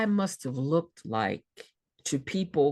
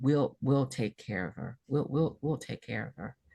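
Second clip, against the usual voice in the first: kindly, gently repeated words in a reassuring voice; 2 semitones lower than usual. Retelling what the woman refusing her upstairs said back: imitating her gentle voice. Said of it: "her voice got gentle".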